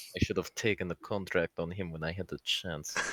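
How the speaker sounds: very soft, quiet under-the-breath mutter. Voicing a character's aside about an old contract: muttered under his breath. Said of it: "says under his breath".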